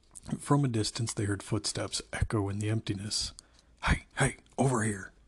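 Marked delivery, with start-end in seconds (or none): 3.8-5.0 sharp, hushed hiss under the breath. Hearing footsteps, John calls the others over, hissed. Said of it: "John hissed".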